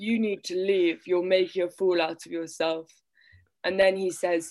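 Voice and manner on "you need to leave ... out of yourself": put-on older-man voice. Retelling a story, the speaker voices the older guy Cephalus; Cephalus voice. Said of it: "I love the new voice".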